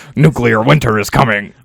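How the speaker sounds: booming, rough, raspy, very loud bellow. Retelling a message sent from a burner phone: Alex Jones impression. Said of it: "That's a flawless Alex Jones impression".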